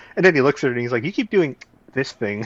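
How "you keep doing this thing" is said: mock fed-up, sassy, really irritated tone. Retelling a movie scene, quoting a character: imitating Raleigh, annoyed and sassy. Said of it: "like he's really annoyed and sassy".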